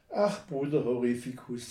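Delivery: plain reading voice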